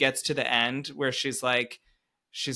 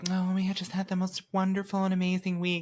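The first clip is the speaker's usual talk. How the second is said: fake cheerful, pitched-up, sunny voice; 6 semitones higher than usual. Retelling two characters' fake cheerful report of their week: imitating fake cheerful tone. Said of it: "giving this fake".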